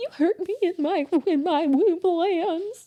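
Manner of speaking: trembling, very high, slow, drawn-out shaky voice. Retelling what a woman came out and said, put-on shaky voice. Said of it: "That was a really good shaky voice".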